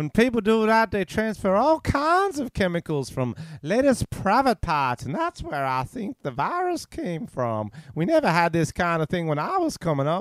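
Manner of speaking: put-on Southern American accent, sing-song, read aloud. Reading out a man's quoted remarks in a southern american accent. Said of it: "I'll read it in my Southern American accent".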